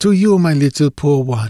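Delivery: gentle, tender-spoken delivery. He raises a glass of wine toward the cemetery, speaking softly. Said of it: "he said softly".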